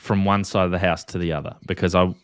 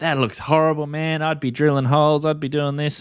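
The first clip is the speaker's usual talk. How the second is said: put-on American accent, pitched up; 8 semitones higher than usual. Imitating viewers reacting to a video, in an american accent. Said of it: "he does his American accent when he does that".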